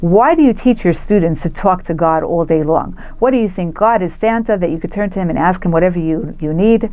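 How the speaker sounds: ordinary talk, nothing marked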